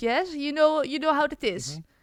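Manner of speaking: English spoken with a Dutch accent. Asked about an accent, demonstrating what a Dutch accent sounds like. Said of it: "because it sounds like this".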